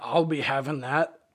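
put-on goblin voice, laughing maniacally. Speaker picturing someone crouched around with a fork and gum wrapper, in goblin voice. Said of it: "laughing maniacally in my goblin voice".

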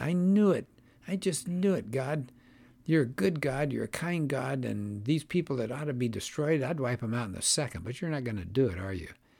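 mock grumbling, whiny, complaining voice. The speaker acts out Jonah complaining to God, mimicking Jonah's whine. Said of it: "Jonah must have sounded kind of whiny".

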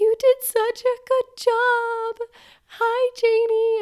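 very high, very slow, drawn-out dolphin squeak voice. Mother greets her newborn daughter right after birth, talking in a dolphin voice. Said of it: "I like am talking in this dolphin voice".

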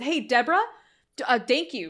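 awkward, forced, stumbling delivery. Retelling a line where a character thanks Deborah: imitating a forced thank-you. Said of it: "it feels so forced".

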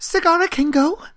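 put-on excited voice. Acting out how the character lights up at being let go: imitating Zagara lighting up excitedly. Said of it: "Zagara just, like, lights up".

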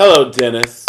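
deep, very low, would-be seductive voice. Greeting the next guest on the show, trying to sound seductive. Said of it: "that was me being seductive".

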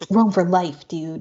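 lazy, slow, drawn-out dude-bro frat voice. Speaker jokingly voices the Romans' motto: frat bro voice. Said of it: "a frat bro voice".

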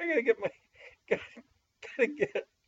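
high, breathless, trying to stop laughing.

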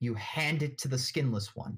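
plain

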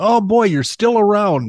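delighted, joyful voice. Acting out a doctor greeting a returning patient, speaker imitates a delighted doctor. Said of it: "there'll be more joy in his voice".

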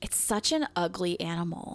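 normal talking voice

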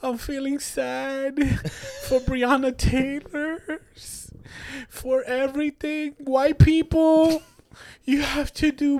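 put-on tearful crying, sad and drawn out. Mocking people who set up their phones to film themselves after tragedies; mock crying. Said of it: "look at the phone, cry".

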